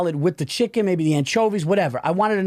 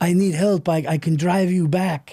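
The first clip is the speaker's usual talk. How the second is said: put-on Serbian accent. Retelling what a man said, in a Nikola Jokic impression. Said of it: "turned him into Nikola Jokic of the Denver Nuggets".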